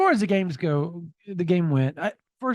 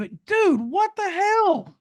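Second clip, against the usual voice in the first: full-on very high, shrill yell; 14 semitones higher, 3 dB louder than usual. Speaker reacting to something just called really bad: yelling. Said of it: "And I know I'm yelling".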